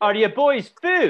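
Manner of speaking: put-on drunken Scottish voice. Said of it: "Drunken Scottish".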